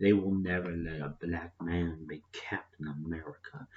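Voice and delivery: low, bitter whisper in a bad put-on voice.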